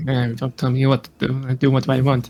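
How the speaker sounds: grouchy, grumbled mutter, low under the breath. Playing a character who leaves after an order: in-character grumbling to herself. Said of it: "she kinda grumbles to herself".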